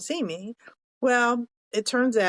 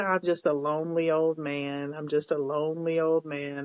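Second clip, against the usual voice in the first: put-on mopey voice, lower; 5 semitones lower, 3 dB quieter than usual. Retelling a man who kept repeating himself, in an Eeyore voice. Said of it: "he sounded like Eeyore".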